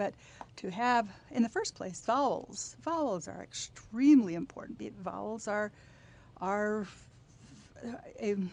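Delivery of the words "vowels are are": slow, halting stammer, repeating words. A speaker explaining something in a conversation trips up mid-sentence, stammering. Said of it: "sorry, I'm stammering".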